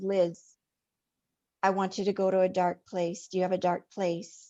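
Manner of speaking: imitated quiet emotionless delivery. Retelling an instruction given for the cave scene: imitating quiet, emotionless speech. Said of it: "he tells me very quietly and no emotion".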